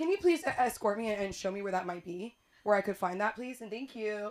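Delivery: mock abrupt, sudden switch of register. Retelling asking staff to show where the stapler is: sudden tone switch. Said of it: "Switch up of tone".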